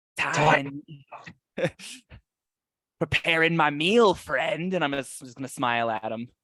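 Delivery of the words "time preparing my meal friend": high, goblin-like put-on fantasy monster voice. Speaking as a bugbear, grinning at him: goblin-y voice. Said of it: "kind of speak in a goblin-y accent".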